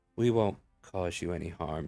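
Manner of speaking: very flat, toneless monotone delivery. Narrating a scene, a female character speaks to a stranger, very monotone. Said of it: "She says in a very monotone manner".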